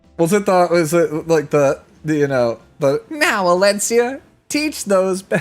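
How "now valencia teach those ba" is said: put-on child character voice, higher pitch. Showing a game character's voice line: Young Senya voice. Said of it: "I do a pretty good Young Senya voice".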